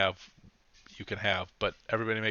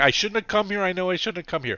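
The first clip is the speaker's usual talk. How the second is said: very high, loud, screeching gnome voice; 9 semitones higher, 8 dB louder than usual. Game narrator voices a gnome screaming at a fire: gnome screaming curses. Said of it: "She's screaming in Gnomish".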